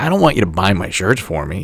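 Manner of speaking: ordinary delivery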